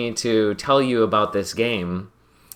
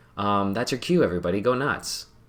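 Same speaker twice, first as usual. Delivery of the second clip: ordinary delivery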